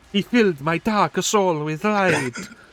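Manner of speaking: put-on Italian accent. Voicing a game character, in a stereotypical Italian accent. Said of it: "moving into stereotypical Italian".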